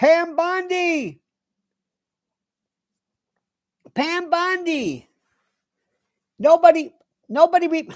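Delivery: shouting. Talking heatedly about who started the Epstein story: yelling. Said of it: "I'm being told I'm yelling".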